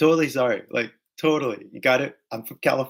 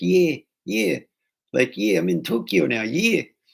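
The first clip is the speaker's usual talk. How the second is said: odd-sounding put-on South African accent; 4 semitones higher than usual. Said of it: "his accent was so weird".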